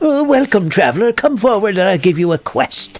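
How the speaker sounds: put-on high-pitched elderly villager voice. Showing the voice of old quest-giving villagers: old villager NPC voice. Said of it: "by old people, you know, that sit on their porches".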